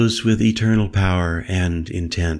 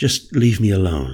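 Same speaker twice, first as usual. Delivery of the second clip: usual speaking voice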